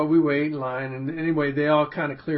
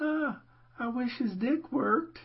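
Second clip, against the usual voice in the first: put-on old lady voice, much higher, quieter; 10 semitones higher, 5 dB quieter than usual. Telling a story, saying a line to his dad in the old lady voice. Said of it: "in the old lady voice".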